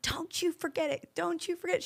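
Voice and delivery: mock hollered yell, repeated. Retelling a friend yelling across a retreat room: imitating a friend yelling. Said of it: "She starts yelling at me".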